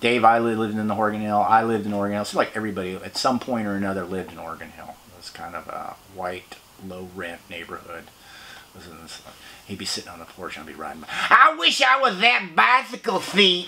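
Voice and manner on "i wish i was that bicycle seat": slow, very high, drawn-out yell. Retelling what a man on his porch yelled while riding by: imitating a man yelling. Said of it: "he would yell at me as I was".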